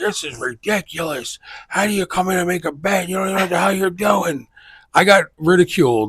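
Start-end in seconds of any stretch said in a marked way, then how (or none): 0.0-4.5 put-on old men voices, yelling, heckling. Retelling how old men at a betting window reacted: imitating old men yelling. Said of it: "then these guys start yelling".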